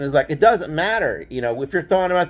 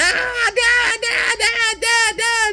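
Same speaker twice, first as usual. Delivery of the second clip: very high, very slow, drawn-out wailing screams. Retelling a childhood whipping, speaker acts out the cousin's cries: imitating cousin screaming. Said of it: "And he's screaming".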